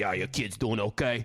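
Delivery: laid-on fake Brooklyn accent. You're quoting your favorite accent in the MCU; do Tom Holland's Spider-Man with a fake Brooklyn accent. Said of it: "It's like a fake Brooklyn accent".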